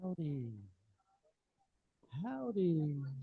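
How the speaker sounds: very quiet, sluggish, slow, drawn-out delivery. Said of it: "I'm making fun of them because that was so slow".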